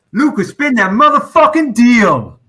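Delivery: high-pitched, loud, slow put-on New York accent. Asked to announce the wheel spin in a best New York accent. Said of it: "in your best N Y C C voice".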